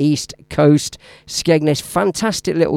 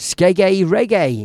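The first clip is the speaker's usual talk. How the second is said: put-on southern English accent; 4 semitones higher than usual. Speaker says a word the way a mate pronounces it: imitating Vinny's southern accent. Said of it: "I love that southern accent".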